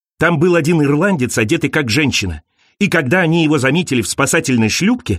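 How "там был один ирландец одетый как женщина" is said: usual speaking voice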